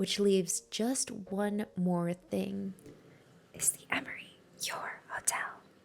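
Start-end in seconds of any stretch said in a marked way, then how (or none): 3.5-5.5 whispered, much quieter. Ad narrator revealing the hotel's name at the very end, whispered.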